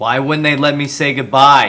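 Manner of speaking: shouting. Repeating a question after being told to yell it: yelling. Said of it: "Yell it".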